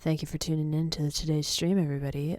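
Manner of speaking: mock, put-on radio announcer voice. Streamer signing off at the end of the stream, in a radio announcer voice. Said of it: "talking like this".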